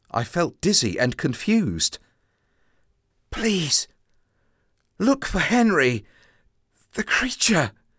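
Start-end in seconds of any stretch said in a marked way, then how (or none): 3.3-7.8 high-pitched stage whisper. Held by a policeman, the narrator half-whispers a plea before collapsing. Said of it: "I whispered".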